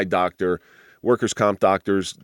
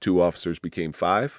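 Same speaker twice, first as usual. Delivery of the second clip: ordinary talk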